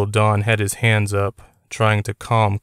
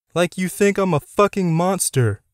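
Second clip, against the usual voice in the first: high, raised, outright shout; 9 semitones higher than usual. Narrator reads a character confronting an uncle who suspects him, shouting. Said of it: "Connor shouted".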